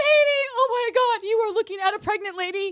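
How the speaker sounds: loud, frantic, overwrought, hysterical blurted outburst. Retelling running down to him after the pregnancy test: imitating own hysterical outburst. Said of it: "I run down hysterical".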